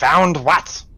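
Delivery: puzzled, confused, high little kobold creature voice. The game master voices a kobold reacting to the party, confused kobold voice. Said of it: "you hear a confused kobold voice".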